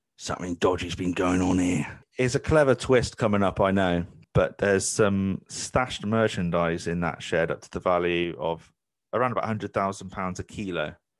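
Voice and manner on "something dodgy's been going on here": put-on London geezer wide-boy voice. Imitating the man just described, say it in a diamond geezer voice. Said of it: "that sort of diamond geezer kind of".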